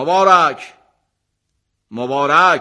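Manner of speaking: loud calling out.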